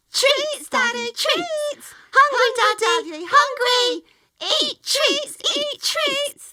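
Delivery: put-on very high, loud, squeaky baby animal squeal. Narrator voicing two baby pine martens calling to their daddy, squeaky baby animal voice. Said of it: "they squeaked".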